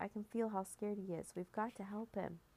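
plain reading voice

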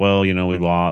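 put-on flat monotone voice. Retelling a player's post-game interview: imitating DJ's monotone interview. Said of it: "it was very monotone".

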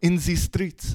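terrible, unconvincing put-on French accent, very high pitched. Repeating how a French girl said a phrase, in a bad French accent. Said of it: "my French accent's terrible".

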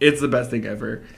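usual speaking voice

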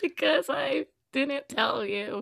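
put-on, words pushed out through tears. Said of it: "Why are you, like, crying?".

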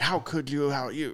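furious, indignant outburst. Retelling being called out by the boss: imitating a furious outburst. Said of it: "and I get furious".

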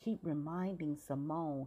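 ordinary delivery

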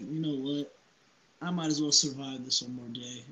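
ordinary talk, nothing marked

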